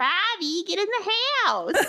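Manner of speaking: very high cartoon mom voice, calling out. Comparing a co-host's voice to a cartoon mother: Bobby's mom from Bobby's World. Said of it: "or Bobby's mom on Bobby's World".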